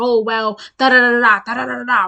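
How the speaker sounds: mock foaming-at-the-mouth rant, loud and angry. Retelling how a man reacted when confronted: imitating someone angrily arguing. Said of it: "he just starts foaming at the mouth".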